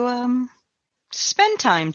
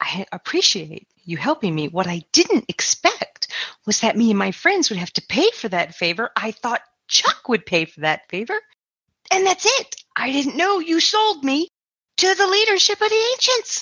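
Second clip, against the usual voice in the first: hushed whisper, much higher pitch; 5 semitones higher than usual. Narrator voices Marcy stepping into the hall, away from Chuck, in a hushed whisper. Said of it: "in a hushed whisper".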